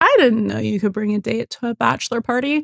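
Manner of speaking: very bitchy, catty tone. Retelling a character's line about a bachelor party date: imitating Eddie's bitchy tone. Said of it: "in the bitchiest way possible".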